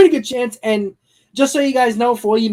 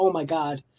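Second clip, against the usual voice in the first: soft, hushed half-whisper with barely any voice; 5 semitones lower, 9 dB quieter than usual. Retelling waking up unable to speak: imitating own half-whisper. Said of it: "I literally was whispering".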